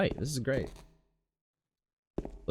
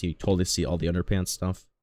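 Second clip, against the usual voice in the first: plain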